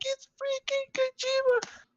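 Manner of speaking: mock, very high, excited shrieking scream. Recounting his own reaction to an announcement beside an unimpressed woman: retelling an excited scream. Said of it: "Like I'm screaming".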